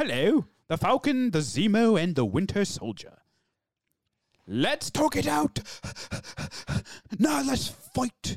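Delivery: breathless plummy British accent, panting and swooping. Speaker reads the line as a posh british man chasing a bus: posh british accent, panting. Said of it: "read it in the accent of a posh British man chasing after a bus".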